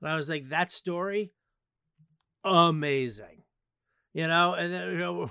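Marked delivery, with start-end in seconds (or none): 0.5-3.4 sarcastic, insincere fake compliment tone. Retelling his own sarcastic reply to her long story: retelling own sarcastic remark. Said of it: "a sarcastic dick to her".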